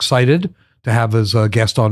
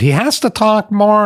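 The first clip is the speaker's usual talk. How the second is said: Yiddish-inflected speech; 10 semitones higher than usual.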